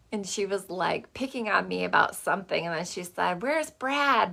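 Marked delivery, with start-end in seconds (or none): 3.4-4.3 put-on Michigan accent, high-pitched and loud, called out. Retelling what a ninety-year-old woman said: imitating a Michigan accent. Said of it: "In her Michigan accent".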